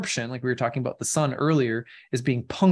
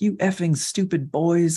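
high-pitched, furious, angry voice; 5 semitones higher than usual. Retelling how a woman cussed out boys doing donuts in a parking lot: retelling angry cursing. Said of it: "started cussing him out".

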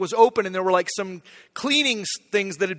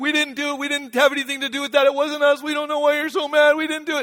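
put-on high, crying, blubbering children's voices; 7 semitones higher than usual. Retelling shouting at a group who sobbed back, imitating them crying. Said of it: "They're crying".

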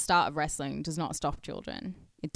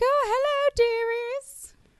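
very high, ladylike Victorian lady voice. Joking that a punched man turned into a Victorian lady: Victorian lady voice. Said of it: "Did he become like a Victorian lady after?".

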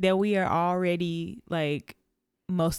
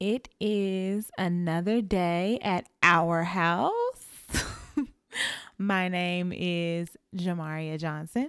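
slow, unhurried delivery. Co-host opening the show with their names, talking slowly. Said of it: "I don't know why I'm talking so slow".

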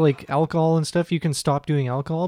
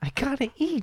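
mock lisping high voice, higher and quieter; 10 semitones higher, 7 dB quieter than usual. Imitating his joke line: imitating a lisp and high-pitched voice. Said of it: "he's got a lisp and a high-pitched voice".

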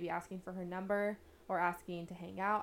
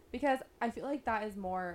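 voice cracking mid-word on more. Speaker discussing dating with another speaker, voice cracking. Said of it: "my voice just cracked".

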